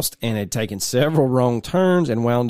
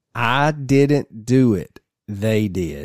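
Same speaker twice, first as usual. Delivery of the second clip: very slow, eerie, calm delivery. Telling a story, quoting a man staring at the dad, retold eerily calm tone. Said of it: "said in an eerily calm tone".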